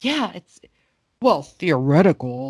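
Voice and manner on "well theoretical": low, slow, seductive voice. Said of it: "Like seductive Howard voice".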